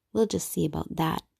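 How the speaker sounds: ordinary delivery, nothing marked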